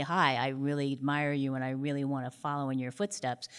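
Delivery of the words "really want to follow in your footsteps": normal talking voice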